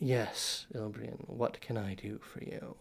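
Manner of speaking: slick, thin, oily, hushed whisper. A dark shape in a mirror answers a summons, thin, oily whisper. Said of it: "a voice just sort of very thin but oily whispers out".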